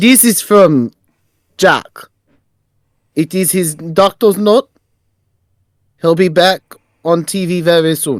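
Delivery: put-on, played-up Western European accent. Voicing a character handing an envelope to the booker: put-on western european accent. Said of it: "I wanna do the accent".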